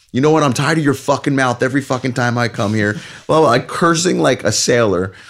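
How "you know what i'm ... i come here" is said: angry, heated, rapid screaming at full volume. Retelling screaming at a guy with their sons behind them, retelling a top-of-lungs scream. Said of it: "I start screaming at this guy at the top of my lungs".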